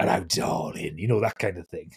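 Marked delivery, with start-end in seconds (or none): 0.0-1.0 bad New Zealand-tinged Cockney, low and slimy. Showing how a slimy character in their story sounded, slimy Cockney voice. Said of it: "slimy characters sound even more like Billy Butcher".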